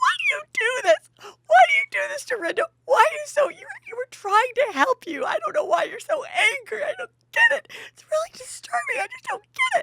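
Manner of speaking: very high, loud sobbing and wailing. Retelling an argument at a breakfast table: imitating Ramona crying. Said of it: "Ramona just starts crying".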